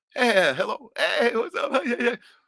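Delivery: very high, slow, drawn-out, cheery, friendly tone. Recalling a man switching voices mid-beating to answer a call, imitating a friendly phone voice. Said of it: "2 different fucking speaking voices entirely".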